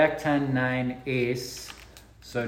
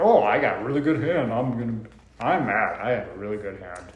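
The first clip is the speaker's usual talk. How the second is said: jeering, teasing put-on parody voice; 3 semitones lower than usual. Imitating the other player bragging about a good hand: imitating the other player. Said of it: "That's a great impression".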